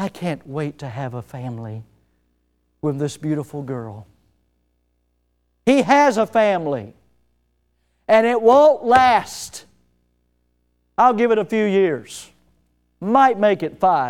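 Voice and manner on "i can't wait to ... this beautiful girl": very low, very quiet, soft little voice. Mocking what an unfaithful man said this morning: imitating his little soft voice. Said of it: "With his little soft voice".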